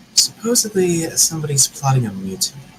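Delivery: hushed, confiding, voiceless conspiratorial half-whisper. Leaning in close to share a rumor in character: half-whispering. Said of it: "I'm gonna whisper".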